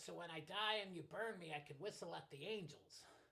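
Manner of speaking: put-on New York accent. Imitating mom, who is from New York: imitating mom's New York accent. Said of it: "my mom's from New York. She talks like this".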